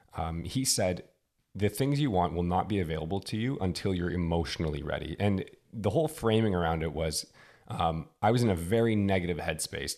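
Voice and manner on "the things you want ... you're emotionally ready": usual speaking voice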